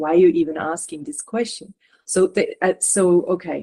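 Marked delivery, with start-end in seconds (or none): none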